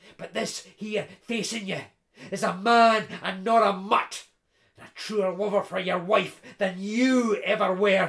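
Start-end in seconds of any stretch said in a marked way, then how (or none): none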